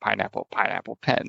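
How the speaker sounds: soft mumble under the breath, barely voiced. Retelling words said at work, imitating muttering under one's breath. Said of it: "I just muttered under my breath".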